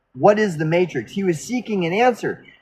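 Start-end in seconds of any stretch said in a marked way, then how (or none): none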